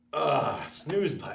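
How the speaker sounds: unwilling, reluctant, dreading early-morning grumble. Showing the inner voice that wants the snooze button: voice dreading the alarm. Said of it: "do you get the voice that says".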